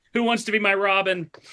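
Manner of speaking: put-on crying. Retelling a Thanksgiving dinner in a Batman outfit: imitating own past crying. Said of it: "crying, being like".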